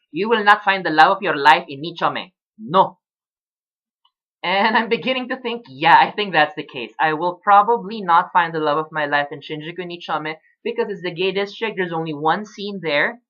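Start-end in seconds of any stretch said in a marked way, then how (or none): 0.1-2.9 put-on heavy Latin American accent, laid on thick. Quoting what a friend once told him: thick Latin American accent. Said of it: "he once said in a thick Latin American accent".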